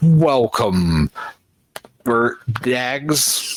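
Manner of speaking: harsh, discordant, buzzing, droning creature voice. Narrating a scene, the speaker voices a figure greeting the listeners: discordant buzzing drone voice. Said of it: "That same discordant, buzzing drone voice greets you".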